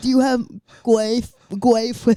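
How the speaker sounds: clumsy fake German accent, high, very loud. Retelling something from when they were younger, the speaker does a put-on german accent. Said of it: "my best impression of a German accent".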